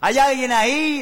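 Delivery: high-pitched shouting at full voice. Telling a joke, acting out the doctor calling into a cave, retelling a shout. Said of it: "así gritaba el médico".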